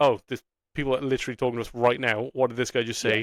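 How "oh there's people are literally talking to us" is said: plain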